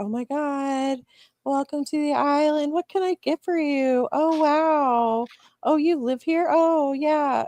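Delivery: put-on very high, spaced-out, sedated calm. Describing the McDonald's staff on the island, imitating people acting sedated. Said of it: "everybody acts like they're on fucking Valium".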